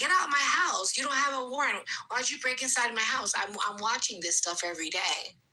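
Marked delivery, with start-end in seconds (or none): 0.0-3.3 put-on yelled-out screaming, protesting tone. Retelling news videos of people's houses being broken into: imitating people screaming. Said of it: "There's people screaming".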